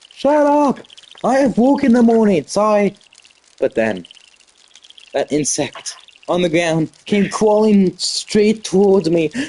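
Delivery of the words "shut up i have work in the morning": put-on yelling, higher. Retelling how a neighbor yelled through thin walls: imitating the neighbor yelling. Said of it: "my neighbor yelled again".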